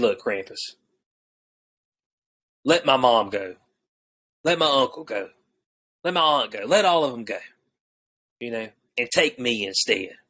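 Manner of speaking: low, grave, earnest, dead serious pleading tone. Retelling a character confronting Krampus: imitating a dead serious plea. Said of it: "And he's dead serious".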